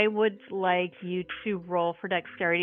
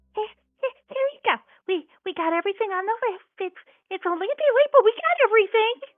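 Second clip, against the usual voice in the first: squeaky, tiny, very high little mouse voice. Telling a story, speaking as the little mouse in a tiny mouse voice. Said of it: "what sounds like a little tiny voice, probably a mouse".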